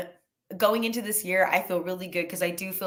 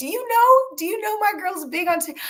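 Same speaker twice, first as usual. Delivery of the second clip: shrill, very high-pitched yelling; 13 semitones higher, 3 dB louder than usual. Retelling a friend on speakerphone at a coffee shop: imitating a friend yelling. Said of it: "she's yelling".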